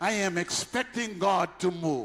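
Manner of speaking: loud, slow voice carrying to the far row. Showing the congregation how to say the line: loud. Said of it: "You gotta say it loud".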